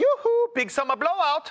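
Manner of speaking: put-on German accent. Guest offers to show off the little German they speak: trying to speak German. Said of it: "I actually speak a little German. Let me try it".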